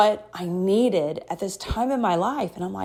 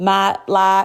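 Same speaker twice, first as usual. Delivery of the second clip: put-on fast Texas accent; 4 dB louder than usual. Imitating how people in Texas say it: imitating a Texas accent. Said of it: "they say".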